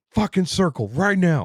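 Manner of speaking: put-on high, shrill, enraged furious yell. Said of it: "yelling all the fuck shit".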